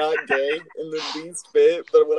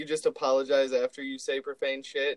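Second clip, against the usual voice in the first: usual speaking voice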